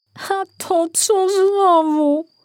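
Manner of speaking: very high, very slow, drawn-out groan. A man woken at night by eerie howling, groaning. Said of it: "Jęknął".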